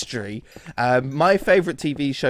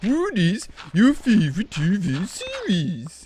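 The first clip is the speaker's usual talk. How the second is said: silly voice, every vowel an o, higher pitch; 6 semitones higher than usual. Reading a question aloud to show the made-up language: silly voice, every vowel an o. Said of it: "in that silly voice".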